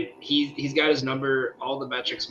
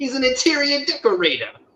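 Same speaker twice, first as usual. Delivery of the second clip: put-on very high, swooping mobster voice; 13 semitones higher, 6 dB louder than usual. Quoting a scene in the woods: Sopranos mobster voice. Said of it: "remember me doing that voice is I was watching The Sopranos".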